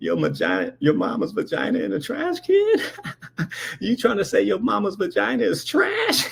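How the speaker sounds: mock cracking up mid-sentence, laughing through words, sing-song. Retelling what a laughing woman said back to the speaker; imitating someone laughing while talking. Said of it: "She's cracking up laughing".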